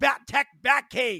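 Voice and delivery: put-on high, full-lunged, top-of-lungs scream. Retelling how Ryan screams what he wants for Christmas, imitating Ryan screaming. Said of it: "He screams".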